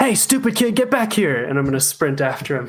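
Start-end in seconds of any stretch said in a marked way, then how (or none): 0.0-1.4 very high yelling holler. Playing a character who chases a thief, yelling at a kid. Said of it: "What are you gonna yell at him?".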